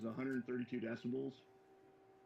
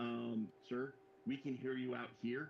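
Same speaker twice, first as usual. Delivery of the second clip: normal talking voice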